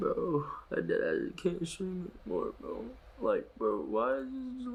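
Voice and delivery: fake crying, mock sobbing. Complaining to another speaker on stream, fake crying. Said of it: "are you fake crying right now?".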